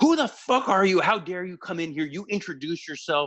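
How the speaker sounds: mock raging, high, furious, in-your-face scream. Retelling a wrestler bursting from the locker room: imitating someone screaming. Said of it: "starts just screaming at me".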